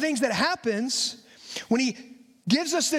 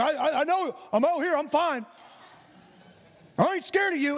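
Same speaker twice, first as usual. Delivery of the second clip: mock tough-talking bluff, putting on a hard front; 2 semitones higher than usual. Retelling taking the trash out at night as a kid: imitating talking tough. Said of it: "talk tough to anybody that was over there".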